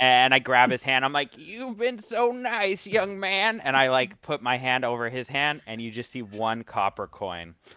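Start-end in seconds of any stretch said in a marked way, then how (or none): 1.4-3.6 put-on very high, frail, quavering old man voice. Playing a hunched character posing as an old man, thanking someone: acting as a frail old man. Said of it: "like an old man".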